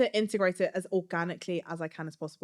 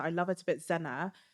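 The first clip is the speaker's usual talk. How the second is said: ordinary delivery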